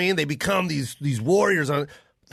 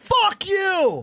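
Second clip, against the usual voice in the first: acted, very high, screamed screech; 12 semitones higher than usual. Imitating crowds screaming at young college basketball players: imitating fans screaming. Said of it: "we scream at 'em and we hate 'em".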